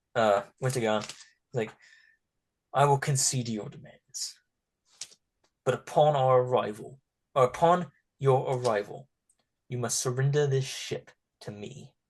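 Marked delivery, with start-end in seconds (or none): 2.7-11.9 angry ship captain voice. Voicing a ship captain who glares at the players: glaring captain's voice. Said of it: "he kinda glares at".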